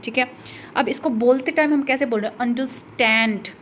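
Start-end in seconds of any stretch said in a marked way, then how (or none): 2.4-3.4 third syllable stand in understand punched. Teaching which syllable takes the stress, stress on stand in understand. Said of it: "stand पर जोर लग रहा है".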